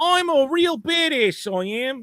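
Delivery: put-on British urchin accent. Imitating a character, british street urchin accent. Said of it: "the British equivalent of a street, uh, urchin accent".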